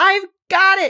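exultant, high-pitched, loud triumphant cry. The queen, having caught her own shawl, cries out: triumphant cry. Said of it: "she cried in a triumphant tone".

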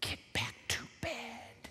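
slow, hushed whisper, barely audible. Acting out a parent speaking to little girls through a monitor, whispering.

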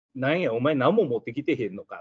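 plain

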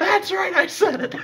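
very high, loud, nasal voice. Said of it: "I love his high-pitched nasally voice".

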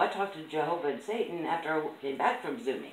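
ordinary talk

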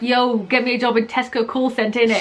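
plain

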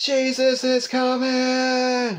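very high, loud shout with coming drawn out. Retelling a dream of watching an eclipse: retelling a loud shout. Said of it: "I just started shouting".

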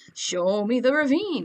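held single tone, drawn out. Repeating a line from a voice clip, Count Dracula voice. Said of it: "that sounds like Count Dracula".

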